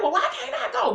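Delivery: put-on high, defiant child yelling. Retelling talking back to mama: imitating own past yell. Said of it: "This me yelling".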